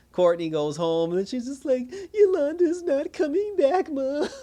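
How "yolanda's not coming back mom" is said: very high, drawn-out, slow, tearful sobbing. Retelling a character's line to her mom: imitating someone crying. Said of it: "crying and everything".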